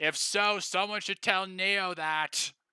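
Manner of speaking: called-out line. A character answers a remark about public displays of affection, shouting. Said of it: "Owen just shouts".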